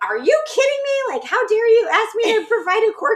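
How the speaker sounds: very high, outraged, angry yelling, acted out. Retelling a movie phone scene, imitating her yelling at him. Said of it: "yelling at him for being like".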